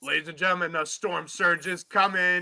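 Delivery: hyped stadium announcer voice. Picturing being the team's pa announcer introducing the team: hyped pa announcer voice. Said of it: "I'd be like".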